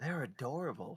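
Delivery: hushed whisper. Leaning over to Ruby, a player character whispers. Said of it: "just whisper".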